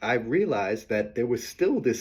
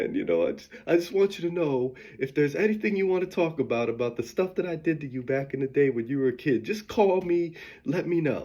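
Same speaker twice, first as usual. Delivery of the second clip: put-on voice talking through tears, crying; 4 semitones higher than usual. Speaker retelling what her mom told her; imitating mom crying. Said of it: "she's crying like".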